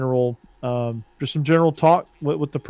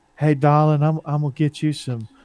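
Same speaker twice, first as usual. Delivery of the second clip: mock sweet Southern lady voice, put-on Southern accent. Describing her aunt, the speaker voices her, imitating a sweet Southern lady. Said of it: "She's like Southern, like".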